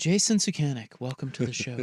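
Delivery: put-on low public-radio voice. Introducing a guest on the show while mocking public radio: mock NPR voice. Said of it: "N P R voice is the worst".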